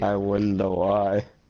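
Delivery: lecherous tone. Making a remark during a tabletop game: pervy tone. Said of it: "Why do you sound so pervy?".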